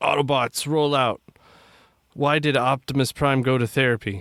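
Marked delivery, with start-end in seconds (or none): 0.0-1.2 heroic robot leader voice. Speaker tries a character voice before telling a joke: Optimus Prime voice. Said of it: "in my best Optimus Prime voice".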